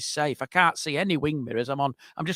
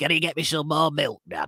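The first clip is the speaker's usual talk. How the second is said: put-on little, croaky old person voice. A dad quoting his unwell youngest child, imitating a croaky voice. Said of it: "she's got a croaky voice".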